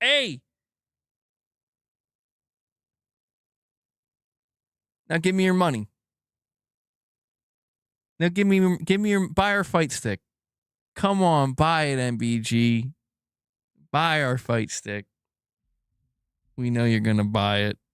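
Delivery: put-on taunting corporate voice. Retelling how Sony pushed buyers: mocking Sony executives. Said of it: "they were like".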